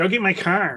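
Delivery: put-on Michigan-accented speech. Speaker shows how someone's accent slips over toward Michigan, Michigan accent. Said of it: "starts to scooch over to Michigan".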